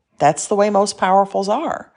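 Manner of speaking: normal talking voice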